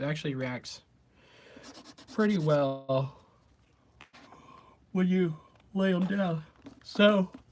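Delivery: talking through a yawn. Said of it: "sorry, I'm yawning".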